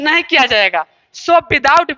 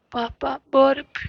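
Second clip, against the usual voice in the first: slow, soft mumble under the breath; 7 dB quieter than usual. Acting out someone who wants a sweet but knows papa won't buy it, slow murmur. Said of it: "कैसे मरमराता है, slowly".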